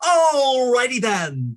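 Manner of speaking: loud high-energy voice. Describing his impressions, the speaker does his Jim Carrey Ace Ventura impression. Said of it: "It was very high energy".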